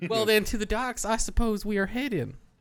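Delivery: put-on southern American accent, very high-pitched and loud. Speaking in character before another speaker asks for a normal voice, southern accent. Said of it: "southern accent".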